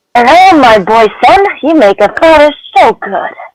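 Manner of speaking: put-on slow, high-pitched elderly man's voice throughout. Asked by the other reader to do the old man, the speaker voices him: old man voice. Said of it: "You do the old man".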